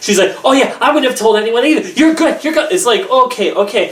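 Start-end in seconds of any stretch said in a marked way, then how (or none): 0.4-2.7 wired, manic, way-too-eager, hyper gushing chatter. Retelling how Tiffany reassured Liana: imitating Tiffany, overly hyper. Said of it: "stop saying it like you're on meth".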